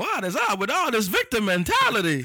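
high, slow, swooping, drawn-out sing-song delivery. Joking that the phrasing sounds like Jerry Seinfeld: Jerry Seinfeld impression. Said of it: "That sound like Jerry Seinfeld".

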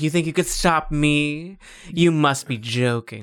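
mock hammy, evil villain voice. Retelling a villain line from the game: imitating Leliana's evil villain voice. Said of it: "She is like".

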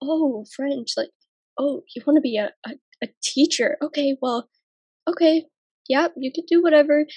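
put-on grudging, judgmental, disapproving old man voice. Speaker recalling grandpa's reaction to their career plans, in a mock-judgmental grandpa voice. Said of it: "I can hear the judgment in my grandpa's voice".

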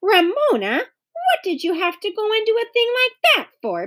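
very high pitched, insistent, demanding tone. A narrator voices Beezus questioning her little sister Ramona, demanding. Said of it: "Beezus demanded".

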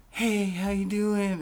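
soft, high-pitched voice. Retelling first meeting a comedian, imitating his Mike Tyson voice. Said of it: "he's got this Mike Tyson voice".

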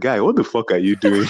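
put-on whisper. Retelling what a guy said to them while dancing: imitating a whisper. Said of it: "whispers in my ear".

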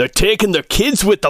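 high-pitched dwarf voice calling out as if across distance. A game narrator voices a dwarf shouting back to the group, yelling. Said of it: "the dwarf yells out".

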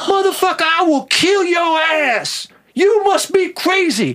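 very high, full-throated, top-of-the-lungs scream. Retelling a man going off on him while he read an address, retelling a man's screaming. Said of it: "He starts screaming at the top of his lungs".

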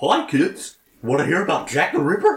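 high, sing-song, swooping cartoon mascot voice. Riffing with others about horror movies, doing a Mickey Mouse voice. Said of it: "Gosh, Mickey".

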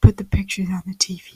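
creepy serial killer voice. Imitating someone staring at the TV in a Jeffrey Dahmer voice. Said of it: "your Jeffrey Dahmer voice?".

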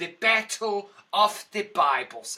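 put-on slow, loud, drawn-out South African German accent. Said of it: "And this is how he sounds".

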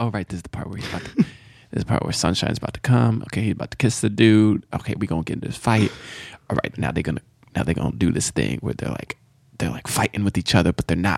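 hushed, quiet, murmured running self-narration. Retelling reactions while watching a movie, quietly narrating to himself. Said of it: "Why were you quietly narrating?".

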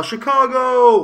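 loud, slow, drawn-out screaming yell. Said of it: "everyone's gonna scream and yell".

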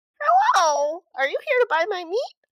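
squeaky, very high, loud little goblin voice. Narrator voicing a meat-stall vendor greeting arrivals, little goblin voice. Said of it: "you hear a little goblin just".

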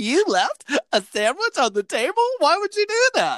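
very high voice, laughing through the words. Retelling how she reacted, imitating her laughing while she talked. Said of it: "she laughed so hard".

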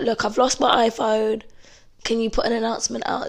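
normal talking voice

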